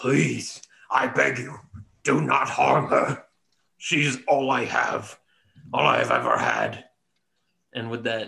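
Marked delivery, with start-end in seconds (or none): 0.0-6.8 slow, pleading, begging voice. Voicing a badly wounded man on his knees: wounded man begging. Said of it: "He turns to you on his knee and he says".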